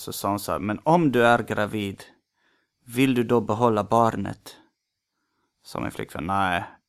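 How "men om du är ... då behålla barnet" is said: slow put-on Polish accent drifting toward Spanish. Retelling a woman's question to the girlfriend, in a polish accent sounding spanish. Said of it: "den här imitationen låter lite mer som en spansk brytning".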